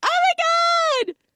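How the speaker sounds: squealing, very high scream with my drawn out. Retelling how she reacted after closing the door: imitating her screaming.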